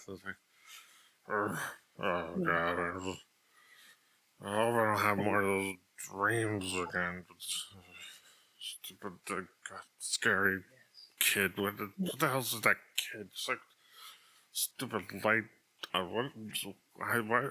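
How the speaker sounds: put-on drunken mumbling and muttering under the breath. Voicing a drunk character mumbling as he is walked over, drunk mumbling under his breath. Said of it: "he starts mumbling under his breath".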